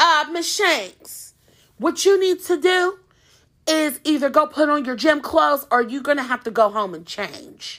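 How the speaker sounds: strict, raspy coach voice, firm and stern. Retelling what a strict gym teacher told a student: imitating a raspy-voiced teacher. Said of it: "she had, like, a raspy voice".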